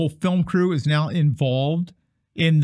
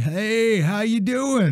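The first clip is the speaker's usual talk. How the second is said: mocking old man voice, higher pitch; 6 semitones higher than usual. Mocking a guitarist who comes up on his cane: imitating an old man with a cane. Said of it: "He comes up on his cane".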